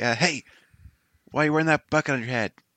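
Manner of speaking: loud, jeering, mocking shout. In a tabletop game, a player shouts a mocking insult at an enemy: shouting an insult. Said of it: "So I'm gonna shout at the guy".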